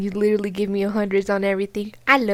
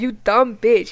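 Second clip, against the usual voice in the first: play-acted raised voice, said bluntly and loud; 4 dB louder than usual. Retelling own reaction on seeing a mugshot: loudly quoting own words. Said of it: "that was loud".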